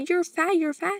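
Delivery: nasty, high-pitched screaming. Retelling how a woman screamed insults at a lady: imitating someone screaming an insult. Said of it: "they were screaming at".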